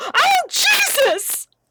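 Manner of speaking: put-on very high, all-out yell at full lungs. Retelling a friend's shout from off camera: imitating Jack Ryan yelling at the top of his lungs. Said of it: "at the top of his lungs".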